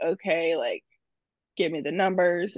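ordinary delivery

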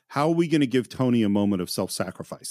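ordinary delivery

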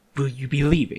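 hurried and impatient. Reading a story, the narrator voices a creature, hurried and impatient. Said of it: "the creature asks hurriedly, growing ever impatient".

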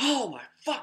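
very high, loud, shrill yell. Retelling seeing red light in the closet at night: imitating own past yell. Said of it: "I yelled that".

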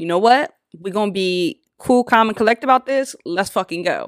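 ordinary delivery

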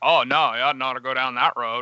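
thick, laid-on, exaggerated Maine accent. Describing an actor's role in a Stephen King movie, doing his thick Maine accent. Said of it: "he has like the thick Maine accent".

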